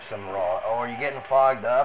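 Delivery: ordinary delivery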